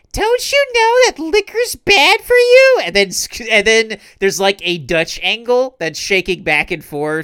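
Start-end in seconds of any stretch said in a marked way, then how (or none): 0.1-2.8 very high, loud, raised voice. Retelling a cartoon scene about drinking alcohol, imitating Tails. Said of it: "Tails is like".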